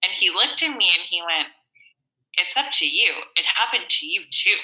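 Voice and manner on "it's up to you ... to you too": play-acted plain, unsoftened, matter-of-fact delivery. Retelling what a father-in-law said while driving: imitating a blunt, matter-of-fact tone. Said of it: "he just said it so bluntly and matter-of-factly".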